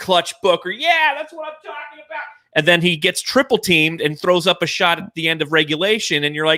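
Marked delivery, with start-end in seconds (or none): 0.0-2.2 put-on very high, climbing, thrilled, excited yell. Recounting Booker's play in the game, acting out the cheer: retelling an excited yell. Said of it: "who you're really yelling at in that room".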